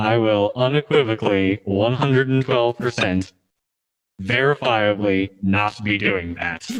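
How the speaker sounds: low-pitched, machine-like robot voice. Retelling what Flack answered Mancubus at the lodge, in Flack's robot voice. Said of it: "I can't do Flack's robot voice".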